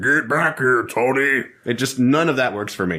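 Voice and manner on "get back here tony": big, bad tough-guy voice. Joining in imitating a movie villain trying to sound big and bad. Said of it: "trying to sound big and bad".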